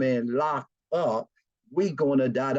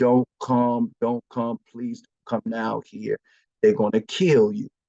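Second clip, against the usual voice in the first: put-on crying woman's voice, tearful; 2 semitones lower, 4 dB louder than usual. Retelling a phone call where a woman, crying, begged him to stay away: imitating a woman crying. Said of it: "she was crying".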